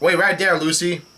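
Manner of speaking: ordinary talk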